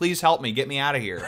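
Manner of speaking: all-out high, loud screaming. Retelling a phone call where Jeff screamed for help: imitating Jeff screaming. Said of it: "He was just screaming".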